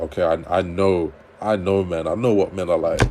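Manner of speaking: ordinary delivery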